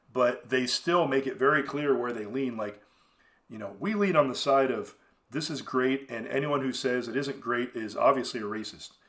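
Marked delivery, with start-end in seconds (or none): none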